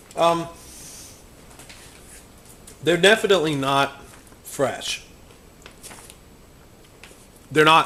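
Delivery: talking mid-chew, mouth full. Tasting m&m's before dinner and commenting on them, talking while chewing. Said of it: "Sorry, just chewing here".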